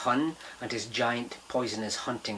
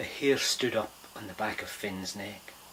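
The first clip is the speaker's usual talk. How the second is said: plain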